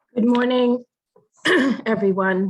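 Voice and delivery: raspy, hoarse. Invited to accept an award on behalf of the team, greeting everyone, hoarse. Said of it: "I'm sorry for the hoarse voice".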